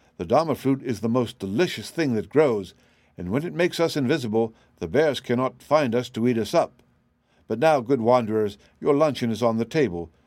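plain

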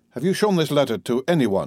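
ordinary delivery

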